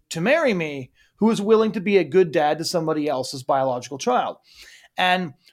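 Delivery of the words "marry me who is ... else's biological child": normal talking voice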